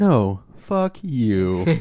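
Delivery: put-on puppet bird character voice. You retell how the guy who played the character answered the director: Big Bird voice. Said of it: "in the Big Bird voice".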